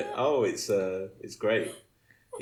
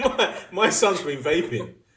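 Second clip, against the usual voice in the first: high, loud, mocking put-on voice. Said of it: "imagine his mum said".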